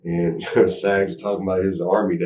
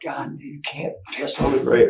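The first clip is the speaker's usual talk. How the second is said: mild scolding half-yell, pitched up; 7 semitones higher than usual. Retelling a night at a grave, imitating Sean screaming. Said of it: "Sean screamed at him".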